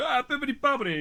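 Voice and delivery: put-on Italian accent. Speaker comparing which put-on accents get a laugh, doing a mock italian accent. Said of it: "the Italian accent is like the last the last accent".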